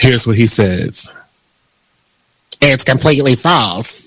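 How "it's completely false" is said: put-on older woman character voice, lower. Reading a quoted denial from a news report in Madea voice. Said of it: "That was my Madea voice".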